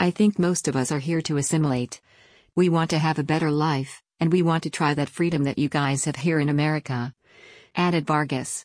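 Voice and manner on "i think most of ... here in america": ordinary talk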